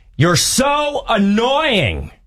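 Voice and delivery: sudden, shrill screamed outburst pitched very high. Retelling how the Uber driver turned down the radio at his passengers, retelling a scream. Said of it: "the Uber driver turns down the radio and screams".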